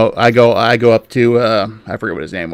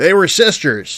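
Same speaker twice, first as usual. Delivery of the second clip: mock drunken man's speech, higher; 7 semitones higher than usual. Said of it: "pretty clearly drunk".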